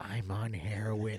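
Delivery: very low, hushed, confiding, leaned-in whisper. Recounting a guy at work who leaned in, imitating his whisper. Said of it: "leans in and whispers".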